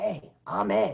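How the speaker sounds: raspy, scratchy, rough-edged voice. Retelling how Ed introduced himself at sound check, imitating Ed's scratchy voice. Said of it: "with his scratchy voice".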